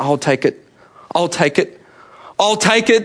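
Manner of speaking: small, hobbit-like voice, speaking up. Retelling the argument over who takes the ring to Mordor, small Frodo hobbit voice. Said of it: "this small hobbit voice comes from the background".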